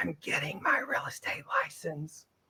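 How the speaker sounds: hushed, confidential whispered aside.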